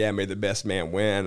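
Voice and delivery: ordinary talk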